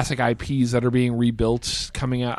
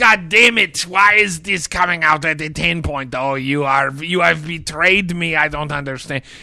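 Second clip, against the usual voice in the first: put-on nerd rage voice; 3 semitones higher, 4 dB louder than usual. Voicing an alter ego in a nerd rage accent. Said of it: "the nerd rage accent".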